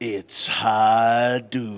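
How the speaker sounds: put-on drawl, starting low, dragging out high. Reading a donor's line aloud on request, in McCree voice. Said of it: "reads this in his McCree voice".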